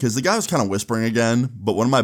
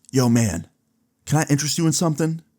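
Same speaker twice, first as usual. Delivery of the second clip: put-on whisper, higher; 4 semitones higher than usual. Retelling what a stranger whispered in his ear: imitating someone whispering. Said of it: "he starts whispering in my ear".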